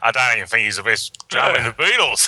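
put-on Australian accent. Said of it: "I almost mentioned an Australian accent".

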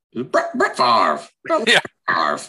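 called out high with swooping pitch. Answering a request for the Madden voice: John Madden voice. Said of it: "the Madden voice?".

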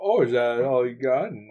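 cocky, mocking, defiant, taunting boastful tone. Retelling another character's words under the whip: imitating a defiant taunt. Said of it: "He's like".

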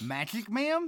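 somewhat shocked, high voice. A soldier on his first day on duty answers a woman, somewhat shocked. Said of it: "The soldier said, somewhat shocked".

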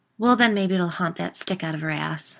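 ordinary delivery

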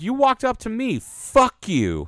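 angry snap, high-pitched and loud.

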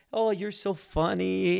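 put-on halting, broken Dutch accent, high and loud. Retelling a story of Corrie ten Boom praying and giggling: Corrie ten Boom's broken Dutch accent. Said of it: "She has broken Dutch accent".

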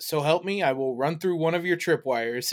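plain

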